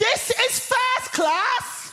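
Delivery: mock, very high, shrill, drawn-out top-of-the-voice shout. Act out the woman seeing you enter the first class carriage, imitating someone shouting at full voice. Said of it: "at the top of her voice, she shouts".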